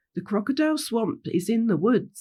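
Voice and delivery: ordinary talk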